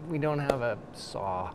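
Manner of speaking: put-on sheepish tone, soft, slow and small. Retelling their answer when asked what else the group needed, retelling a sheepish admission. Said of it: "I kind of sheepishly said".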